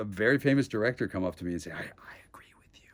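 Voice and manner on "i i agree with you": hushed, secretive whisper, barely voiced. Retelling a famous director agreeing with the speaker: imitating a whisper. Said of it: "Why are you whispering?".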